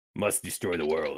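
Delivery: deep demonic voice. During a D&D game, a player suddenly slips into demonic voice. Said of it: "He just suddenly slips into demonic voicing".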